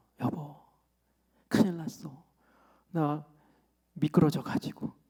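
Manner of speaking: quavering, trembling voice shaking on each word. Husband retells his wife's phone call after her car slid, imitating a trembling voice. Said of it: "떨리는 목소리로".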